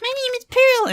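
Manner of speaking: put-on squeaky younger voice. Trying out a younger voice for Pearl, squeaky young Pearl voice. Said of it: "It'd have to be like squeaky like that".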